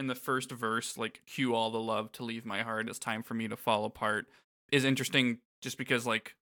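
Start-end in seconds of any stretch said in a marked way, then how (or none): none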